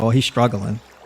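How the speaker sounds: normal talking voice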